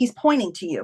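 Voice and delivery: ordinary talk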